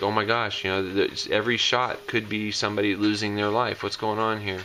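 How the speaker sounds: ordinary delivery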